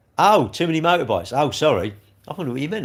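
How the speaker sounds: usual speaking voice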